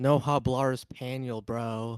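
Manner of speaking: very slow Spanish with heavy English-speaker accent.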